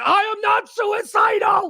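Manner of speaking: very slow, drawn-out, high-pitched yell. Recalling Jussie Smollett being hustled off to jail: retelling Jussie Smollett's yell. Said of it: "he started yelling".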